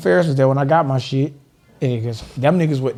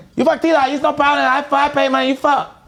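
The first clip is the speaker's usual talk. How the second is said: higher-pitched put-on yelling voice; 13 semitones higher than usual. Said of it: "Johnny, why are you yelling?".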